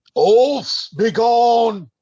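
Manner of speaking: loud, drawn-out roaring bellow. A player's character runs toward a group to get their attention, bellowing. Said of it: "I'm bellowing out".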